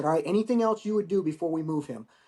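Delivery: ordinary delivery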